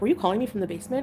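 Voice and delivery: normal talking voice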